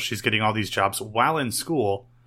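ordinary talk, nothing marked

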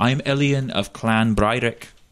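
put-on slow Scottish accent. A woman introduces herself when the speaker walks over: Elian's Scottish accent. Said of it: "Why is she fucking Scottish?".

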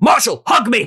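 sudden, high shouted yell. Voicing a character named Slim, who yells at Marshall: yelling in character. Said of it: "and Slim just yells".

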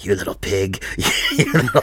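soft, menacing hissed voice. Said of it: "you would have heard him quietly inside going".

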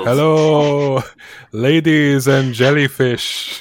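booming, loud, slow showman stage voice.

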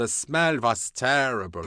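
really camp, put-on Italian accent. Retelling a story, quoting Ken Adams in a camp Italian accent. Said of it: "He sounds like a really camp Italian".

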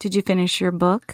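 low, sultry, suggestive seductive voice. Retelling what he asked while catching the speaker's eye in a mirror, imitating a seductive voice. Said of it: "In that same seductive".

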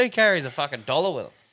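normal talking voice

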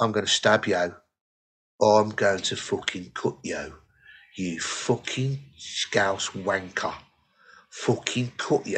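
put-on low, quiet voice. Retelling what a guy in front kept saying, imitating a low, underhand voice. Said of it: "he just kept saying it in a really low, underhand voice".

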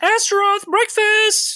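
very high-pitched shouting yell. Narrating a scene, voicing Astaroth's mother, shouting up the stairs. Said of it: "you hear your mother's voice shouting up the stairs".

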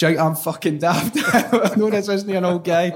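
furious, high, loud, enraged scream. Retelling a prank call, quoting the man on the line, imitating someone screaming. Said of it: "eventually screaming".

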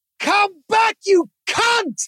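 mock very high, drawn-out, all-out scream. Retelling chasing a bike thief across the road: imitating a loud scream. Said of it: "I just screamed as loud as I could".

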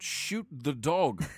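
high, loud yelled voice. In a tabletop game, the game master voices a character yelling a warning. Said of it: "he yells out".

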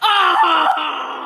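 high, loud scream. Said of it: "he goes".

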